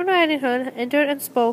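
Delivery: ordinary delivery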